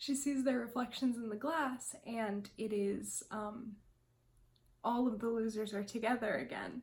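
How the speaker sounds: tearful, crying voice, talking through tears. Describing a scene from the trailer and book, crying. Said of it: "I'm actually crying".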